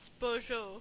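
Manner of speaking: French accent, French pronunciation. Saying a teammate's name after the other speaker: French accent. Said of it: "With the French accent".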